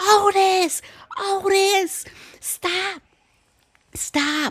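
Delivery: very high, very slow, drawn-out frantic screaming. Recounting the dog Otis running around a lady and two dogs, retelling a scream. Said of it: "I'm screaming".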